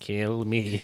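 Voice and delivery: soft mock toy voice. Describing a toy crashing after being launched into a classroom, tiny Furby voice. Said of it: "a little little Furby voice being like".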